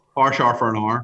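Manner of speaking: Northern Irish "power", "hour" rhymed as "parr", "arr". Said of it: "how you pronounce power".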